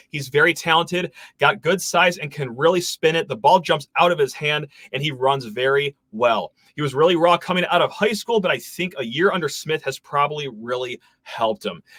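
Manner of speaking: usual speaking voice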